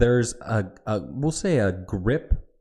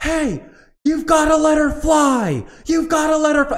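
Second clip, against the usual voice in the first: shrill, very high top-of-lungs scream, fly dragged out; 7 dB louder than usual. Retelling a man clapping loudly and yelling at them, imitating someone screaming. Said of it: "He's just screaming at the top of his lungs".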